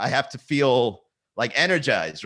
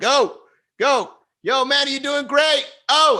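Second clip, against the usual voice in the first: very high, slow hype-man cheering; 13 semitones higher, 4 dB louder than usual. Imagining another guy on the stream cheering: imitating a hype guy cheering. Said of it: "another guy, like, on the stream with me going".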